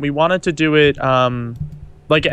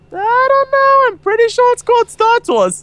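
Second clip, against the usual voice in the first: very high-pitched, raised, argumentative voice; 5 dB louder than usual. Retelling a comedy bit where a guy argues about a movie title, imitating a higher-pitched voice. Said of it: "he'll just go on a higher pitched voice".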